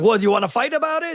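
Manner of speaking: aggressive, combative tone, pitched very high. Imitating a short aggressive dude from Family Guy: imitating an aggressive Family Guy character. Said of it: "all aggressive, and he's like".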